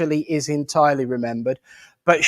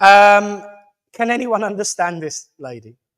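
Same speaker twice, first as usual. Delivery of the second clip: plain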